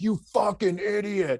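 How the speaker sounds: mock angry yell. Doing a comedy bit about a guy hitting his own thumb: imitating a guy yelling angrily at himself. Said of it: "that's not anger".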